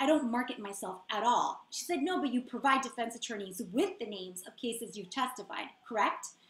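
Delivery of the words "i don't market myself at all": mock super defensive tone, slower. Speaker retells a witness's answer under questioning, imitating her super defensive reply. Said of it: "And she got super defensive".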